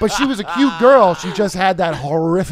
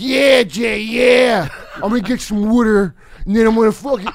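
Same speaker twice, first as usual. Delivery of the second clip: put-on thick outside-Philadelphia accent; 4 semitones higher than usual. Tell your friends how she talked to Jay, in a thick outside-of-Philly accent. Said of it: "the thickest fucking outside of Philly accent".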